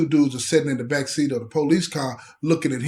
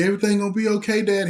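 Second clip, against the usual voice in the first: put-on high, weepy, tearful toddler voice, crying; 6 semitones higher than usual. Retelling a story, voicing a two-year-old daughter: imitating a crying child. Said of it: "She's crying, and she's like".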